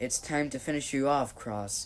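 plain

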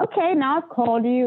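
raspy, guttural, high voice. Retelling what a woman said when she called, in a raspy guttural voice. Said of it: "It was a very raspy, guttural".

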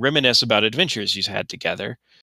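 ordinary delivery

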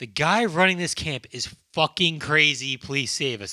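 ordinary talk

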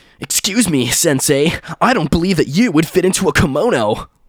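high, cartoonish anime character voice. Joking about a strange insult, the speaker imagines someone saying it, in an anime voice. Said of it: "That's my anime voice".

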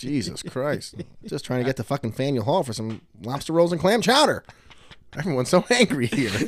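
put-on vintage, old-timey 1940s-style voice. Riffing about someone trying to reach faneuil hall, shifting into the 1940s voice. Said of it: "you always shift into the 1940s voice".

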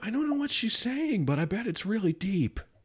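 gentle high-pitched voice.

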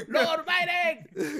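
put-on very high-pitched shouted call. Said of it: "Gritando desde afuera de la Casa Blanca".

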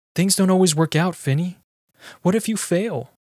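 thin voice about to snap. A father answering his son Finny, thin voice about to snap. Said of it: "My voice is thin, like it'll snap at any moment".

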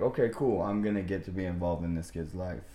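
ordinary talk

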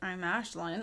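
confused, uncertain, unsure tone. Mimicking the other speaker's sign-off: imitating a confused tone. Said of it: "you seemed confused".

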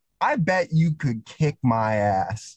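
play-acted, very stern and menacing tone. Retelling what he said when the speaker walked into class alone, mock-stern. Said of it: "he says in a very stern voice".

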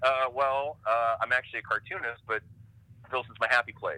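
usual speaking voice

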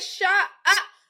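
high, loud yell.

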